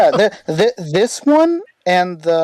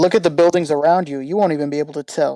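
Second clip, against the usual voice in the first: ordinary talk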